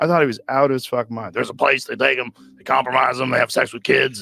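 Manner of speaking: put-on raspy ranting voice. Retelling what Alex Jones told him long ago: Alex Jones impression. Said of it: "Your fucking impression is so good".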